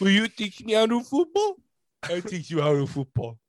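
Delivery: dim, lumbering, goofy, dopey big-lug voice. Joking with your co-hosts during an episode, in a big goof from The Longest Yard voice. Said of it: "I sound like the big goof".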